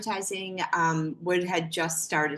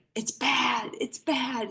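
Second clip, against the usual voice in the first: put-on, high-pitched scream; 7 semitones higher than usual. Recounting the phone call from their dad, retelling dad screaming. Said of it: "He's screaming".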